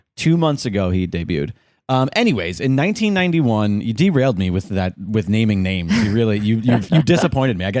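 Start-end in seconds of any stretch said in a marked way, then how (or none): none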